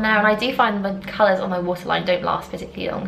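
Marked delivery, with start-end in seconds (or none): none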